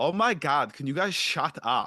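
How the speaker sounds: groggy, irritated, loud, drawn-out annoyed complaint. Retelling how a voice rises from a pile of blankets, Swanky Dave's annoyed voice, retold. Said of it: "you hear a voice go".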